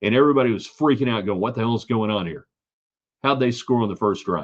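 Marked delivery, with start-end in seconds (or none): none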